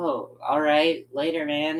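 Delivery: play-acted wistful, let-down, slow sad voice. Retelling someone's reply as the speaker says they're leaving: imitating a sad tone. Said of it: "kind of a sad tone".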